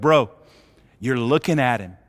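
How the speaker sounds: whispering. Retelling a scripture scene where Jesus answers the blind man: imitating Jesus whispering. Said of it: "Jesus kind of whispers to him and goes".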